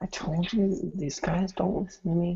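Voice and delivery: said under the breath. Commenting to the group while Jason starts digging, said very quietly. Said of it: "I say it really quietly though".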